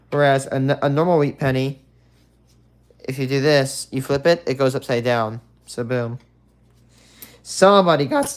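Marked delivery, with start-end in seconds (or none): 7.4-8.3 voice cracking mid-sentence. Showing viewers a fake wheat penny, voice cracking. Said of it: "excuse me for that voice crack".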